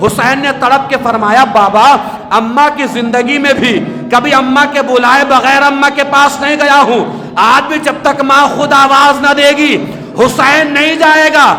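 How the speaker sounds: high, loud, anguished cry.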